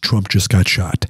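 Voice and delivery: put-on whisper. Retelling what a friend said at a meet and greet: imitating a whisper. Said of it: "he whispers in my ear".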